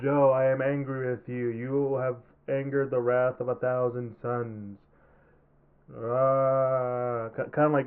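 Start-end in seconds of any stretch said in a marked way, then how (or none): 0.0-4.8 emotionless, flat robotic monotone like cheap dub. Giving an example of how a dub sounded: imitating monotone robotic dub. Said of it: "the most monotone, robotic, no emotion in it".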